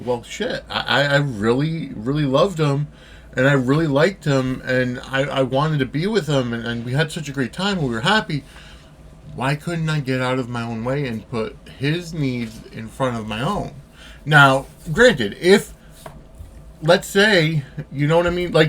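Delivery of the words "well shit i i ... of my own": usual speaking voice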